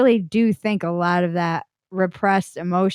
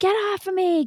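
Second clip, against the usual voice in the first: put-on scream, higher; 12 semitones higher than usual. Retelling screaming out during a meditation: retelling own screaming. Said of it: "I started screaming".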